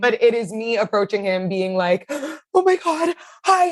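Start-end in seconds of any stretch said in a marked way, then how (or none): 2.1-3.7 very high, slow, drawn-out sobbing. Retelling approaching a man who told the speaker not to cry, imitating own sobbing. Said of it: "it's just me sobbing".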